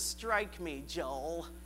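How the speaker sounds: put-on low, soft, nasally kid voice.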